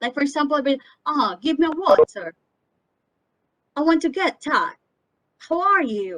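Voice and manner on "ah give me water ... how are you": put-on British or American English accent. Showing learners an accent they don't need to copy: put-on british or american accent. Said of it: "you don't have to sound British or American".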